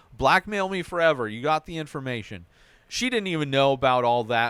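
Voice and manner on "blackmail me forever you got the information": plain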